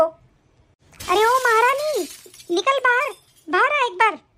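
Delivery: very slow, loud, stretched-out, drawn-out yell. A mother-in-law calls her daughter-in-law to come outside, shouting loudly. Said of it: "क्यों चिल्ला रही हो तुम इतनी जोर से".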